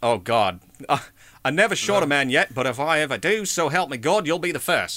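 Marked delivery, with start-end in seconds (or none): 1.4-5.0 terrible attempted Australian accent. Attempting a quoted line on the spot: bad Australian accent. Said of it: "I don't know if I can do an Australian accent this morning, but I'm going to try".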